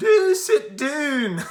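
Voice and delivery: put-on strong Scottish accent, very high, loud, slow. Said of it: "had this really strong Scottish accent".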